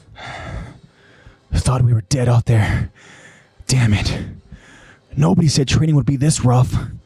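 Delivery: letting out a sigh while speaking. Narrating, the speaker gives Eren's words to the group by the fire, sighing. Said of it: "he sighs as he tells the group".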